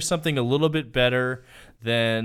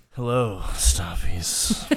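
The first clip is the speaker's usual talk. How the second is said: low, world-weary tone that turns sultry; 5 semitones lower than usual. Asked to say the greeting more world weary, it comes out sultry. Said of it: "a little bit more world weary".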